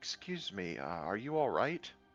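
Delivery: strange, odd, double-toned speaking voice. Voicing a character who speaks aloud to a stranger: odd two-toned voice. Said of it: "he'll say with his actual voice, which sounds kind of odd. It sounds almost two-toned".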